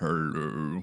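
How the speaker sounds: put-on masculine voice, pitched deep and low. Showing how one could change one's voice: put-on deep man's voice. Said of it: "a woman is putting on a man's voice".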